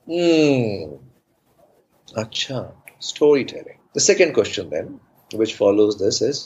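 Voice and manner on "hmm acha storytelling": mocking, doubtful, sarcastic sing-song with drawn-out hmm. Retelling his mother's first question about storytelling, imitating her sarcasm. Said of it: "Malayalis speak with a lot of sarcasm".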